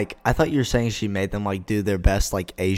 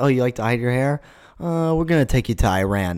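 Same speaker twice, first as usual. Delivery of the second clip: usual speaking voice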